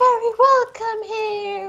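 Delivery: gentle, soothing woman's voice. Showing what the soothing lady's voice sounds like, in a soothing lady voice. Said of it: "in my best impression of the soothing lady".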